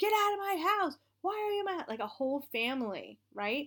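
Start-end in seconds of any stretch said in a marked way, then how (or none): 0.0-1.9 put-on very high, loud shrieking scream. Retelling a sleep paralysis dream where people screamed: imitating people screaming. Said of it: "these people screaming at me".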